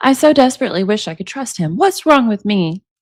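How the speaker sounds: plain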